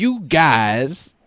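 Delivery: "guys" stretched out, high, loud and goofy. Mocking the other speaker's voice: Bill Cosby impression. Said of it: "You're like Bill Cosby".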